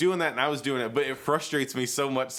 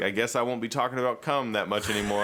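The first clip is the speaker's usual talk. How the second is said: usual speaking voice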